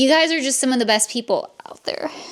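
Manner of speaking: tearful, weeping, crying through the words. Creator thanking subscribers and members for their support, crying while speaking. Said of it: "I'm so sorry I'm crying".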